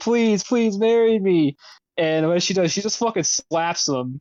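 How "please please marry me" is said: put-on high, screamed, begging tone. Retelling a scene where a character begs her to marry him: imitating someone screaming a plea. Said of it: "he's just screaming, he's like".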